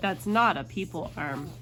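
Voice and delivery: ordinary talk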